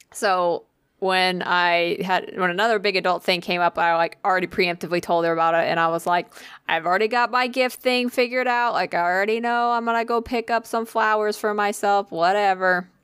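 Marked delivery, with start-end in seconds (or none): 6.7-12.9 put-on flat, bored, unenthused delivery. Retelling what was said to the therapist: imitating own unenthused tone. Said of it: "You sound so enthused".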